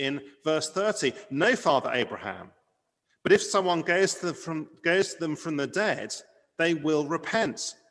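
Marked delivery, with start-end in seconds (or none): 1.3-7.7 raised, urgent, pleading voice. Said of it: "you can hear the, the urgency in his voice".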